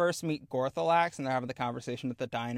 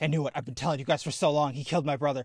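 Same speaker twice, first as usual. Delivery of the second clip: mock bubbly, can't-contain-it, rattled-off giddy excitement. Recapping a scene where the sister is proven right, imitating giddy excitement.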